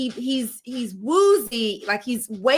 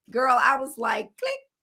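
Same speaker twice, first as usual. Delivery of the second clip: normal talking voice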